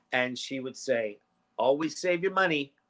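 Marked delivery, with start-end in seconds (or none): 1.5-2.6 put-on sweet, cute, tiny little child's voice. Retelling the phrase she always answered since she was a baby: cute little voice. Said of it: "in her cute little voice".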